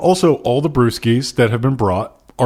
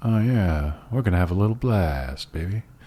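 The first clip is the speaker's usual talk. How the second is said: low, smooth, cool mutter; 4 semitones lower, 8 dB quieter than usual. Suggesting a cooler way to say the line: muttered James Dean cool. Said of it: "you could mutter that and make it maybe sound kind of cool".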